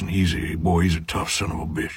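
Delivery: southern-accented drawl. Speaker demonstrating how a book character sounds, southern drawl. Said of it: "He's got a southern drawl".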